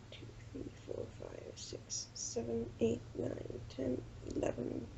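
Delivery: soft whispering under the breath.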